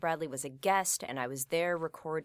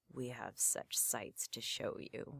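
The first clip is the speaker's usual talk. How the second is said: dropped, breathy near-whisper; 4 semitones lower, 9 dB quieter than usual. Retelling a horror panel where the actor spoke a famous line: imitating Pinhead's dropped voice. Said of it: "he just dropped his voice and said".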